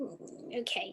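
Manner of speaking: very quiet, breathy, hushed grumbling mutter. Narrating a game scene, the speaker voices a character grumbling to himself. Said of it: "sort of grumbles to himself".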